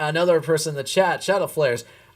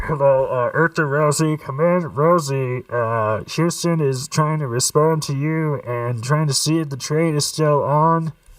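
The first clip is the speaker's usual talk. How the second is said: goofy, dopey, derpy voice. Speaker calls out to rosie as a joke, in a derpy voice. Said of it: "do that in a sort of derpy voice".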